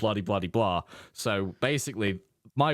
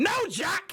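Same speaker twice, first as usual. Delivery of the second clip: high, shouted, ranting outburst. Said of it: "you'd be flying off the handle at me".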